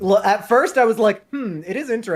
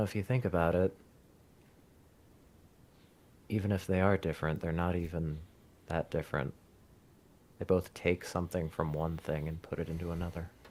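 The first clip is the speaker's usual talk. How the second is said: very soft, very low, fast muttering mumble; 14 dB quieter than usual. Speaker imagining what Anthony will mumble at his stand, mumbling like Anthony. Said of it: "he's gonna kind of mumble something".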